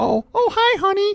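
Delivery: very high put-on woman's voice. Describing a factory worker coming home, the speaker quotes the wife: woman impression. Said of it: "This is my best woman impression".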